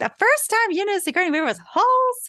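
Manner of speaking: very high, indignant, offended dad voice. Picturing how their dad would react to the Holes remark: imitating offended dad. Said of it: "I can just hear my dad being like".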